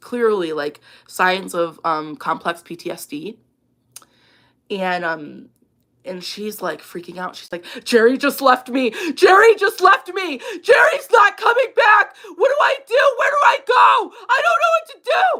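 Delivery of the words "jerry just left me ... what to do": frantic, very high, loud sobbing wail. Retelling a woman on a Walmart curb screaming into her phone: imitating screaming and crying. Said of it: "screaming to her phone, and she's crying".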